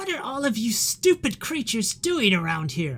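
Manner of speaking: put-on high, swooping elderly lady voice. Game master voices a lady addressing the players on an island, in an elderly lady voice. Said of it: "As you hear the voice of this elderly lady".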